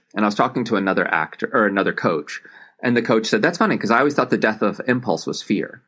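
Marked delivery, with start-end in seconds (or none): none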